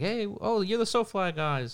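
put-on slight British accent, pitched high. Recounting how the friendly guy welcomed the group, slip into James's slight British accent. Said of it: "You kind of did it right there".

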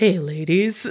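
smooth, jazz radio-host style delivery. Retelling a child's greeting to some ladies, in a smooth jazz voice. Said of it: "With his smooth jazz voice?".

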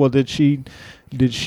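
normal talking voice

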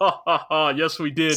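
slow put-on cartoon voice. Speaker recounts a scene where Alexis answers Akane; Inferno Cop voice. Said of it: "that fucking Inferno Cop ass voice".

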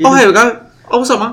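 put-on Australian accent. Describing a minor character, a big rock guy, doing his australian accent. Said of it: "had that, like, Australian accent".

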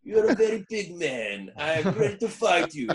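bad, hokey, put-on Italian accent, very high. Retelling cutting a 30-second wrestling-style promo on the spot, in a hokey Italian accent. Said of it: "I put on this hokey Italian accent".

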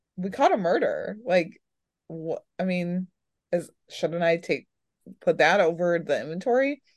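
usual speaking voice

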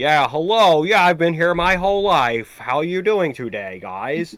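very bad, put-on American accent. Mocking how a guy talks: worst american accent. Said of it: "the worst American accent I've ever heard".

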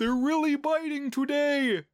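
put-on goofy, very high, silly Canadian accent. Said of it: "he's got this, like, silly Canadian accent".

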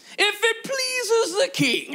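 fake British accent pitched very high. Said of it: "I feel like he had a British accent".

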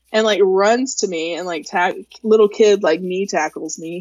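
ordinary delivery

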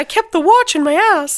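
very high, loud, little cartoon-mouse voice. Quoting a line from a film speech: Mickey Mouse voice. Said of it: "[name] has been doing Mickey Mouse voice".

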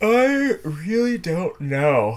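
very high, stretched out through a yawn. Asked by the interviewer whether they would live in Bali, answering while yawning. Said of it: "Sorry, I'm yawning".

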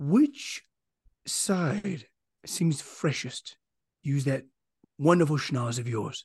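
slow, very quiet, barely-there whisper. Voicing a character urging a companion to sniff out a passage: very quiet whisper. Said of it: "Even in this very quiet whisper".

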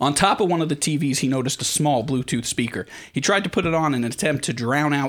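ordinary delivery

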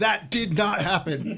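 screamed voice. Retelling reacting to a movie scene: imitating own screaming at the screen. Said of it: "I'm just screaming at the screen".

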